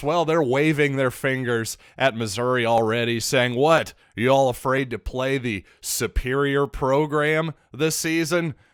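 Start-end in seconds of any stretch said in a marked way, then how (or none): none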